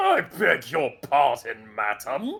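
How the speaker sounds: surprising, loud, swooping creature voice. Voicing a plasmoid creature answering a passerby: unexpected plasmoid character voice. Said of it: "that wasn't the voice I was expecting".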